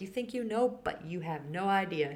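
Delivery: sassy, knowing, know-it-all put-on tone. Retelling what they say with a finger wag: imitating a sassy message. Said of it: "There's sass, a lot of sass coming out".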